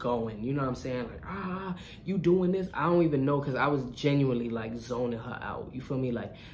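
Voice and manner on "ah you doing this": mock drunk shouting, much higher. Recounting a drunk woman yelling at them in their house, imitating drunk yelling. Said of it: "she was just blacking on me".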